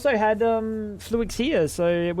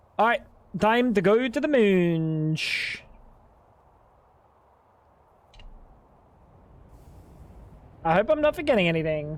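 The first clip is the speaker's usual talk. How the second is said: fake French accent with "moon" drawn out. Talking to chat while playing: fake French accent. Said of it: "Why is he doing a French accent again?".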